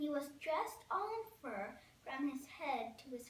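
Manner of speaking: ordinary delivery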